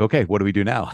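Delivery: put-on sassy woman's voice. Retelling what she said walking up at baggage claim: imitating a sassy woman. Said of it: "she's being kinda sassy".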